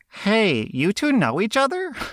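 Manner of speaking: very high, animated, swooping put-on toy voice. Retelling what the boy toy asked at the open house: put-on voice for the boy toy. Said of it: "Not the right voice for this".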